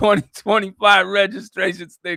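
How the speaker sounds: laughing while reading.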